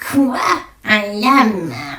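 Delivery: theatrical, put-on cartoon villainess voice. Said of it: "je vais essayer de faire la voix d'Izma de Cusco".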